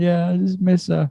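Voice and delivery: weepy, crying. Retelling own words said while crying to a consoling friend: imitating own past crying. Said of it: "I was just crying".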